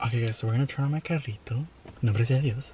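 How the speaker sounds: speaking in a whisper. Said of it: "Why are we whispering?".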